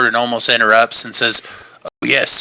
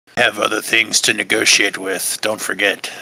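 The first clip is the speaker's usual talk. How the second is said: quiet, low aside muttered under the breath; 2 semitones lower than usual. Playing a character quietly reminding another in a negotiation: muttering under his breath. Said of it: "kind of under his breath".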